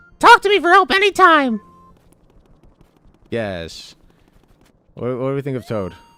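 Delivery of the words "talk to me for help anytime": very high, very loud, shrill helper character voice. Reading a game character's line aloud: Toad voice. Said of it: "The Aaron Hansen Toad voice?".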